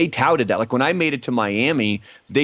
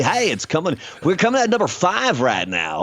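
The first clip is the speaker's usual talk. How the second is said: pitched-up retro 80s top 40 countdown radio DJ voice; 6 semitones higher than usual. Showing a co-host how 80s top 40 radio sounded: 80s top 40 DJ voice. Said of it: "Like that".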